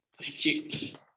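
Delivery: choked-up, tearful, whispered voice.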